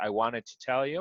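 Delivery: ordinary delivery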